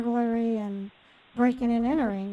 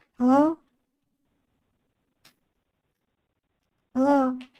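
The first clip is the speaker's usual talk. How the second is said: raised, fake, innocent-sounding put-on female voice; 3 semitones higher, 5 dB louder than usual. Answering a scam call, playing it low key and innocent, in a put-on female voice. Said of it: "I know I'm talking in a female voice".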